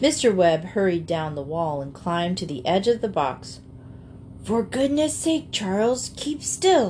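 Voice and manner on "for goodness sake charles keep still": whispering, much higher pitch. Narrator reads Mr. Webb urging Charles to keep still; whispered. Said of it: "he whispered".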